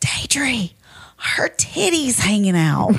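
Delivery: slow, breathy whisper. Retelling what a friend whispered to the speaker: imitating Jordan whispering. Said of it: "Jordan whispers over to me".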